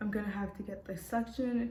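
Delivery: ordinary delivery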